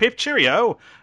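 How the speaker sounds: odd mashed-up put-on British accent. Mocking an actor told to sound not American; weird fake British accent. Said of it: "some weird amalgamation of British".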